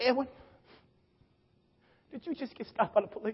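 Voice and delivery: quavering, trembling, hushed near-whisper. Retelling his mama's phone call after a police stop, imitating her trembling voice. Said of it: "Her voice is trembling".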